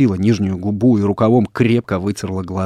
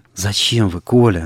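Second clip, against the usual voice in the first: whispering, slower pace. Sonya whispers to Nikolai after he calls out to passers-by. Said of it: "шепнула Соня".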